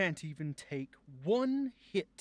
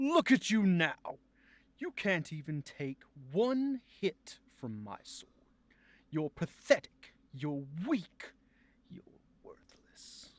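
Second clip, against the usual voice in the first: haughty, arrogant, gloating villain voice. Performing a villain's taunt after a sword hit: arrogant villain voice. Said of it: "how to play the arrogance in a villain".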